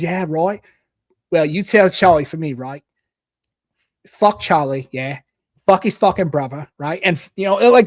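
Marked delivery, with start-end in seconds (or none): 0.0-7.0 imitated regional British accent. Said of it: "I wonder if that's a regional thing".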